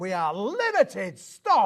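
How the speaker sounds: very slow announcer voice, stretched words, big swoops. Announcing limited stock, sounding like Peter Dickson from X Factor. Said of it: "you sound like the man from X Factor".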